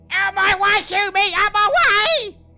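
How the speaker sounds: shrieking goblin voice. Voicing a goblin barreling through a tavern: goblin screaming.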